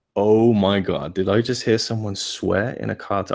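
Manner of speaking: ordinary delivery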